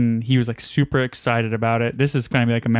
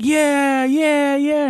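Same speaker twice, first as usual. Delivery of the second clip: mock excited child screaming, much higher pitch. Retelling a five-year-old on a roller coaster, imitating him screaming with joy. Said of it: "he's like screaming, having like the time of his life".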